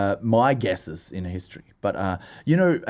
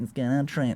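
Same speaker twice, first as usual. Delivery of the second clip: broad Australian accent, much quieter; 7 dB quieter than usual. Showing how a name sounds in an australian accent. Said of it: "Just a good name to say in Australian accent".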